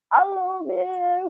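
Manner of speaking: put-on very high-pitched, thoroughly drunk voice. Retelling what a drunk Andy said getting in the car: imitating drunk Andy. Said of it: "He was proper pissed".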